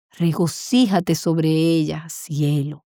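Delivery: subdued, low, slow, mournful reading.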